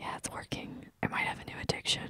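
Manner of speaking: hushed, very soft, barely voiced whisper. Joking about ASMR with another speaker: whispering. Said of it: "please stop whispering".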